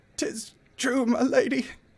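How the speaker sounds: very high-pitched, slow, drawn-out dying voice. Voicing a character in a dramatic reading who is dying: dying character voice. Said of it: "that's how come he sounds like that".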